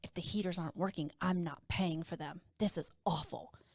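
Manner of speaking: soft, quiet half-whispered aside. Retelling how a guest walked by and spoke about the heaters: imitating someone half-whispering. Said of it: "walks by me and whispers".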